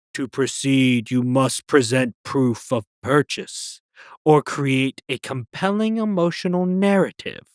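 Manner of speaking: metal-sounding voice. Narrating a store adventure, a voice rings out in the return aisle: metallic voice. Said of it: "A metal voice rings out".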